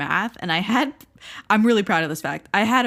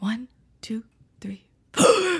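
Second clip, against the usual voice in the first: slow, high numbers spoken while inhaling; 5 semitones higher than usual. Imitating how she counted during lessons, counting on in-breaths. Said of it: "She would inhale when she was saying the number".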